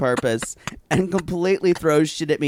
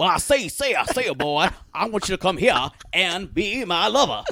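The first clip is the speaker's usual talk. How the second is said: heavily exaggerated Southern drawl; 2 semitones higher than usual. Retelling a reenacted cartoon scene: Foghorn Leghorn southern drawl. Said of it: "some southern redneck shit".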